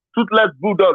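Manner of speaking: ordinary talk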